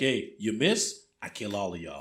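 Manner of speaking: mock cocky, swaggering, full of confidence. Retelling how the marshal talks in the film: imitating a confident swagger. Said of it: "confidence, I mean, like, he was just like".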